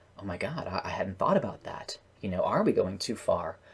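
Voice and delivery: stunned, stammering realization. Showing how a character in the scene might react: stunned by the question. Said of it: "she could just be straight up stunned by the question".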